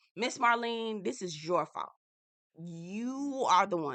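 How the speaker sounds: agitated, heated rant with drawn-out you. Speaker addresses the woman they blame, worked up. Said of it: "I'm getting worked up".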